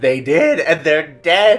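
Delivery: put-on very old lady voice, high and very loud. Retelling a lady's reply to a question, imitating a very old lady. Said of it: "with the oldest voice I've ever heard".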